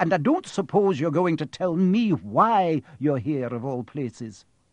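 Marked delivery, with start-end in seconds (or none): none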